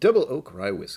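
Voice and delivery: very loud, very high ad announcer voice. Reading text from a website aloud: announcer voice. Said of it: "I should say this with my announcer voice".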